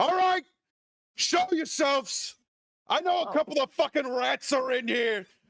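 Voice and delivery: very high, menacing shouted yell. Voicing an NPC gang boss searching for intruders: yelling threats.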